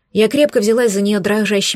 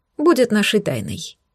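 ordinary delivery

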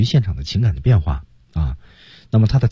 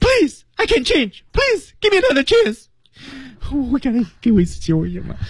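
very high, rushed, tearful voice with sobbing. Coaching a listener to find the feeling of a line, with a crying tone. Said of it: "带着哭腔的，".

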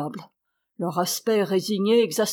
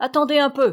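high-pitched, menacing, threatening shout; 5 semitones higher, 3 dB louder than usual. Shouting after the people who stopped near a fence, a threatening shout. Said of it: "leur cria Zotov d'un ton menaçant".

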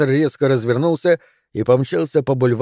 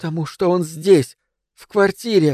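frightened, catching breath in pauses, much higher; 4 semitones higher than usual. A woman answers a man's anxious question, frightened and catching her breath. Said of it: "сказала она в паузах, испуганно переводя дыхание".

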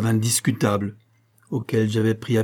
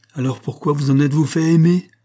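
loud, anguished outcry of real pain; 4 semitones higher, 5 dB louder than usual. Narrator voicing a man confronting the narrator, crying out in real pain. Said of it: "s'écria Montchal avec une véritable douleur".

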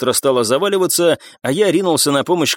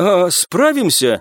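unsteady, shaking, trembling, quavering voice; 4 semitones higher than usual. A companion asks the narrator a question before a deadly fight; trembling voice. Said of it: "дрожащим голосом спросил Роман".

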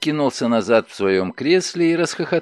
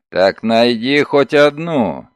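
loud, growling voice; 5 dB louder than usual. Narrator reads a man ordering a bellboy to find a vase, growled. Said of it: "прорычал Догерти".

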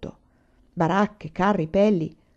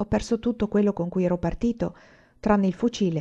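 ordinary delivery

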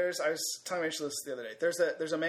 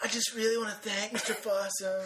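mocking put-on stoner voice, higher; 5 semitones higher than usual. Mocking the other speaker's impression of a student: imitating the other speaker's James Franco impression. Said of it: "an impression of James Franco".

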